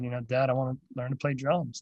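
ordinary delivery

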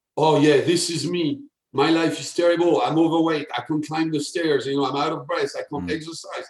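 ordinary talk, nothing marked

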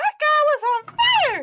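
tiny, squeaky, very high little voice. Game master voicing something on top of the monitor, in a little voice. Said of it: "you hear a little voice".

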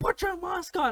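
put-on shrill, very high, angry barked shout. Retelling a run-in while smoking outside, the speaker quotes a man: retelling a man's shout. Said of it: "started shouting at me".

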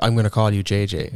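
ordinary talk, nothing marked

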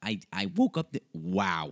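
voice breaking and cracking on the words. Introducing himself on a new podcast, the host's voice cracking. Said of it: "You hear that voice crack?".

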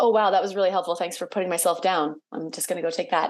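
plain

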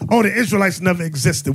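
ordinary delivery

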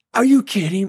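acted, piercing, very high, shrill holler. Retelling a long climb up a mountain at night: imitating himself yelling. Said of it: "I'm yelling".

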